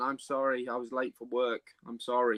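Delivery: ordinary delivery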